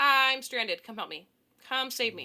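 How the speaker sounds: overdone, loud, fake, dramatic cry. Retelling a made-up excuse phoned to a friend on a bad date: imitating her own fake dramatic plea. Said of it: "I sounded so fake and dramatic".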